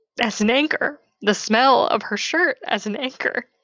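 choked up, tearful, cracking voice near tears. Describing meditating on the feeling of their mom, the speaker tears up, voice cracking. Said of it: "so I'm sorry if my voice is cracking".

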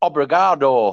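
put-on thick Bolton accent. Retelling how a guide said thank you in Portuguese: imitating a thick Bolton accent. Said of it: "it was with a thick Bolton accent".

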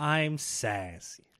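smugly ingratiating. Showing how a character should deliver her line, smarmy. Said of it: "but smarmy".

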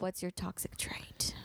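hushed, slow, teasing whisper.

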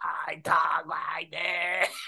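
slow, breathy robotic voice-changer voice.

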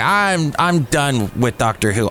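normal talking voice

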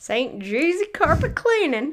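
put-on country accent. Repeating a carpet cleaning business name after a suggestion: put-on country accent. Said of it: "But probably not with a country accent".

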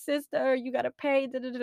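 put-on high, tearful, sobbing plea. Retelling a phone call to family about a fine, imitating own past crying.

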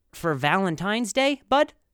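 normal talking voice

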